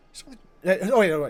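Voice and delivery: ordinary talk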